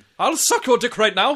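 pompous British voice. Acting out a pleading British woman's offer: pompous British voice. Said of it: "very pompous British".

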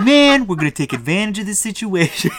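put-on New Jersey Mandarin accent. Describing the leader of the Yaks gang looking at a knot, New Jersey accent. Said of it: "New Jersey Mandarin accent".

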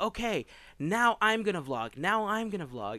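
put-on high, loud, hammy child's yell. Retelling how the youngest son yells before filming: imitating a son yelling. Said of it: "He'll start yelling".

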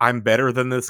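usual speaking voice

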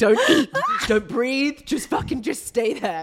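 mock, shrill, very loud, unhinged frantic snapping. Retelling a labor moment, ordering Paolo to freeze: imitating her own psycho-moment snap. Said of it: "I was having a psycho moment".

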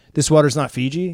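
plain

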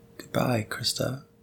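spooky, ominous, hushed whisper. Signing off, the speaker says goodbye to the other speaker: ominous. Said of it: "I don't know why you said it so ominously".

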